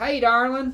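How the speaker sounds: very high, loud southern robot drawl. Imitating a robot waitress in a diner scene: southern-accented robot. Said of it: "The robot with the, uh, southern accent".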